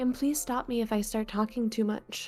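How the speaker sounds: soft, hushed half-whisper. Speaking to the other performer while doing a voice, in a soft half whisper. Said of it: "Are you not just whispering?".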